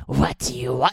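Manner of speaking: put-on monster creature voice. Describing an audiobook narrator who voices all the characters: monster voice. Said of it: "he'll do a monster's voice and he'll be like".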